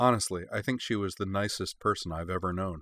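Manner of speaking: plain reading voice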